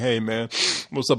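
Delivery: put-on sleepy, drowsy voice. Imitating how the other speaker sounded earlier: imitating a sleepy greeting. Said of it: "You was kinda sleepy before".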